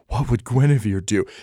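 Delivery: mumbled, half to himself. Voicing a character who is looking for help: muttering. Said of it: "You just hear him mutter".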